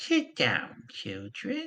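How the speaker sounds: put-on old woman's voice like crunching leaves. Narrating a scene, voicing the little old woman telling the children to sit, crunching-leaves voice. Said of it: "She says in a voice reminiscent of crunching leaves".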